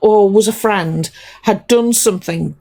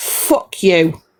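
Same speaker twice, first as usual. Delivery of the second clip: really cross, angry outburst, low-pitched; 4 semitones lower than usual. Ranting at people who skip due diligence, the speaker is really cross. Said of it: "I'm really cross".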